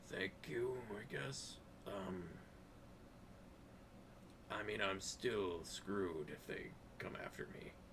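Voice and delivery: very quiet, soft, breathy whisper. Voicing a freed prisoner by a wall near guards: whispering.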